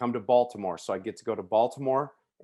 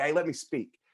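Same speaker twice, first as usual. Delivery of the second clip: put-on begging tone, higher pitch; 5 semitones higher than usual. Retelling a chance to fill in for a missing clinic speaker: imitating own past begging. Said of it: "and I was begging".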